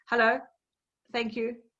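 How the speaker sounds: very curt, brusque, abruptly cut short. Explaining personality types on phone calls, showing the c type: very curt. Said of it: "it will just be very curt".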